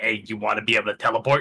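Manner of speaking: normal talking voice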